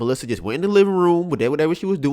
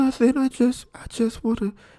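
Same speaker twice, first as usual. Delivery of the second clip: put-on small, high, childish voice of a seven-year-old; 8 semitones higher than usual. Retelling how a woman answered when asked what was wrong, imitating Melissa's seven-year-old voice. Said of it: "that little like uh like seven year old voice".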